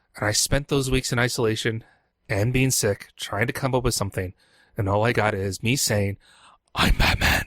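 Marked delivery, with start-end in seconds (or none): 6.8-7.5 gravelly put-on superhero voice. Showing the only line from a Batman parody script: gravelly Batman voice. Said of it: "in a gravelly voice".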